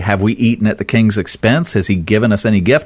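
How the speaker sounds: ordinary talk, nothing marked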